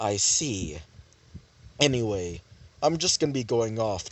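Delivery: low, flat, even monotone. Voicing the character Belle's reply in Belle's monotone voice. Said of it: "Belle would basically say that with a monotone voice".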